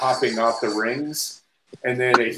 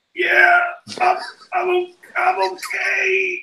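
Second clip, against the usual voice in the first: horrible squeaky very high voice, stretched out. Speaker retelling the reply from behind the bathroom door, imitating Kelly's horrible voice. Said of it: "I just hear this like horrible voice".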